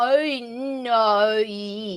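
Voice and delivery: thick, broad Australian accent, "no" drawn out. Showing how no sounds in a broad australian dialect: broad australian accent. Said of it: "broad dialect in Australia is literally, like, five syllables".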